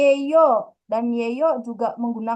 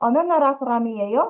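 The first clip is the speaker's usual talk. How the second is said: pitch rising on the final word yo. Korean lesson in indonesian, asking a question, rising pitch at phrase end. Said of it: "diucapkan dengan intonasi yang naik pada bagian akhir kalimat".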